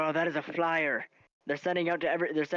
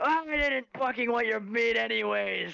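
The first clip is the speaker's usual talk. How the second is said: put-on rough, high, boozy, grumbling drunk pirate voice; 7 semitones higher than usual. Voicing a drunk pirate tiefling stumbling out of a bar: drunk pirate tiefling voice. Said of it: "you hear a drunk pirate tiefling come out".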